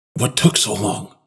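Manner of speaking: hissing. A man pulls the narrator's father close to question him: hissed. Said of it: "pulled my father close and hissed".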